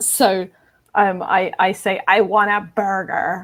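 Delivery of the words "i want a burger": fake, bad, nasal, out-of-control American accent. Saying the line she hates, in a put-on american accent. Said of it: "in an American accent".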